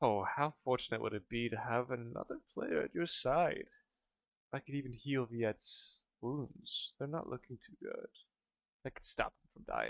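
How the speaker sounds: speaking in a devil voice. Voicing the devil offering to heal a player: devil voice. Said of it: "and he says".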